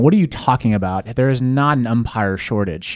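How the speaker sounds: plain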